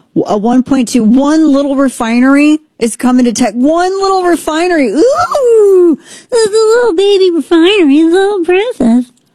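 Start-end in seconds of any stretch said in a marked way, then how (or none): 4.9-9.0 high put-on voice with a long, stretched ooh. Mocking a small new refinery, calling it little: Daisy voice. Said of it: "It's my Daisy voice".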